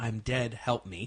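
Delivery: put-on, imitated whisper. Retelling a recording of a young girl's voice at a cemetery, retelling a whispered plea. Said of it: "she whispers".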